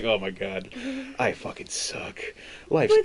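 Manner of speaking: put-on slow, gloomy, mopey emo self-pity. Retelling a story character's mid-fight breakdown, the speaker imitates goth emo despair. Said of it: "straight goth emo boy in the middle".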